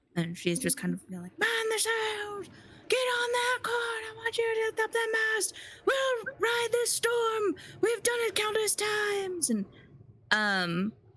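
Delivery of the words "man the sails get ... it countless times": very high-pitched, loud shouting. Describing a dream storm scene at sea, voicing Captain Rosalie shouting to the crew. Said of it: "you see Captain Rosalie shouting to the crew".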